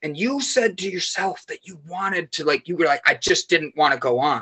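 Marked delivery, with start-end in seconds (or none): none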